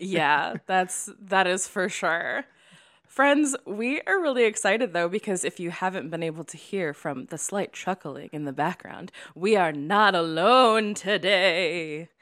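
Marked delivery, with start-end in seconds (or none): 9.4-12.0 spooky villain voice, much slower. Speaking to the audience, in a spooky Scooby-Doo villain voice. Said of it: "Why is it spooky?".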